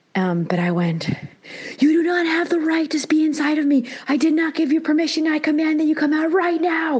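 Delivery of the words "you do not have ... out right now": acted, high, forceful commanding scream. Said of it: "screaming at it".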